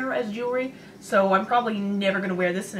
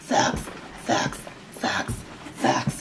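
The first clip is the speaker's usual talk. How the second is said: demonic voice, much lower pitch; 9 semitones lower than usual. Messing around while putting on socks for viewers, in a demon voice. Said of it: "I sound like a demon".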